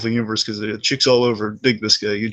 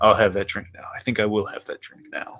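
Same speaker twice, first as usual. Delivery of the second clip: put-on cocky old Hollywood delivery, quieter; 2 semitones lower, 4 dB quieter than usual. Retelling a film scene, imitating Loki, cocky old Hollywood delivery. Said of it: "it's like an old Hollywood thing".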